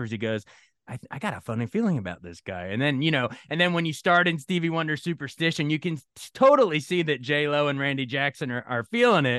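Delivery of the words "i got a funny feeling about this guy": whisper, pitched much lower. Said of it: "he even whispers".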